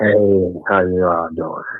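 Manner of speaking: mock seductive voice. Greeting the others as they join the show: put-on bedroom voice. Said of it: "don't be with the bedroom voice on the show".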